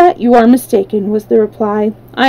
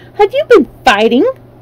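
startled, scandalized, shocked outcry; 3 semitones higher than usual. Reading a story aloud, Dorothy cries out to Bellina the chicken: shocked cry. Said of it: "cried Dorothy in a shocked voice".

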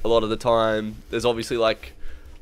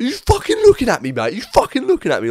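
put-on very high, loud, shrill aggressive voice; 13 semitones higher, 5 dB louder than usual. Retelling a fan confronting the speaker after a game: imitating an aggressive drunk bloke. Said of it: "gets real aggressive and starts squaring up".

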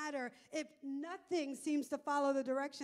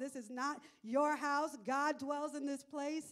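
ordinary talk

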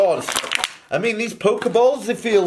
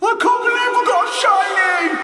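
fake excited, super-happy cry, very high pitched; 13 semitones higher than usual. Showing how to act super happy while unboxing Pokemon cards, fake super happy. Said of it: "And just act super happy".

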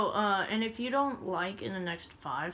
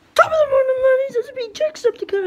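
put-on Irish accent, higher and louder; 16 dB louder than usual. Opening a gameplay video with a bad Jacksepticeye impression. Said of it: "I sound absolutely nothing like Jacksepticeye".

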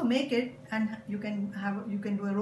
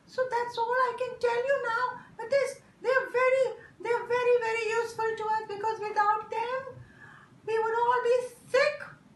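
very high little puppet helper voice; 13 semitones higher, 4 dB louder than usual. A puppet is used to explain things, speaking in puppet voice. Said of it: "A puppet is used to explain".

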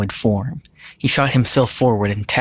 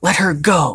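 high, forceful, insistent, demanding voice; 8 semitones higher than usual. A man confronts the captor holding a woman: demanding. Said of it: "Sam demanded".

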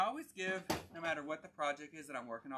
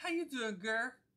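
high, chatty salon stylist way of talking; 8 semitones higher, 4 dB louder than usual. Retelling a salon visit, imitating the stylist's way of talking. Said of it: "That's how she was talking".

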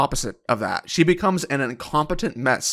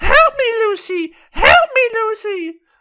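very high, loud, crying, sobbing scream. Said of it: "she starts screaming".

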